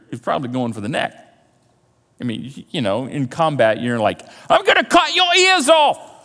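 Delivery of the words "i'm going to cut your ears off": bad put-on British accent, squeaky, very high. Speaker acting out a combat threat: horrible Monty Python accent. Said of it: "And that's a horrible accent".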